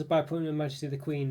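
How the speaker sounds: ordinary talk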